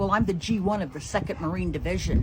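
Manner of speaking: plain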